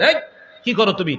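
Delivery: plain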